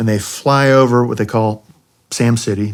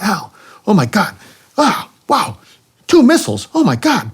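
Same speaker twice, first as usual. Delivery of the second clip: put-on very high, excited, animated thick Puerto Rican accent; 11 semitones higher than usual. Retelling his wayman's reaction, imitating Willie's thick excited accent. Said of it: "very thick accent when he gets excited".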